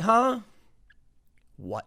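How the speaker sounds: put-on baffled, bewildered, confused tone. Retelling reporters being shot at on live TV: imitating confused reporters. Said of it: "they're just like".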